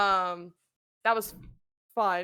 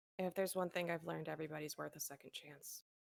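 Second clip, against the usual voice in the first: very quiet, hushed, low murmur; 4 semitones lower, 15 dB quieter than usual. Answering a question in the scene, speaking in a low voice. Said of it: "What happened to your volume again?".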